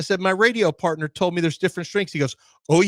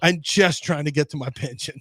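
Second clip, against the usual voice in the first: put-on surly, grumpy veteran voice. Retelling a locker-room story, quoting a veteran player: imitating a surly veteran. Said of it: "he's just the surly veteran".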